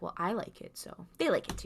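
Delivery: put-on unsettling, creepy tone. Retelling a tv scene, quoting a character: imitating a creepy tone. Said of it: "he's giving this kinda creepy".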